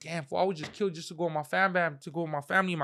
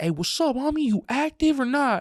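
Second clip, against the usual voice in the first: loud, raised, hollered yell; 8 semitones higher, 6 dB louder than usual. Retelling doing time, calling to the homies on the top tier, retelling yelling. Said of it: "I'm yelling at the homies like".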